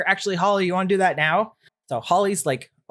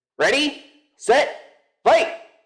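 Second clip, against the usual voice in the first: high, booming, carrying shout; 9 semitones higher, 4 dB louder than usual. Voicing a figure calling the start of a fight: booming voice. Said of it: "Scruff's voice booming from over the field".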